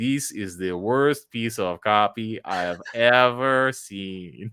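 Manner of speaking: put-on heavy Portuguese accent, laid on thick, drawn out. Retell a mean copy reviewer's first critique, imitating Evaldo's thick Portuguese accent. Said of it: "in his thick Portuguese accent".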